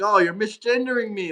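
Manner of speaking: put-on angry complaining. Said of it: "flip their shit".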